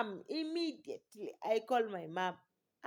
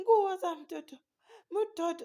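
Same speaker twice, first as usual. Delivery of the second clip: sobbing, high and loud crying; 7 semitones higher, 6 dB louder than usual. Retelling how she told her mom about the baby, retelling her own crying. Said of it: "I'm crying and telling her".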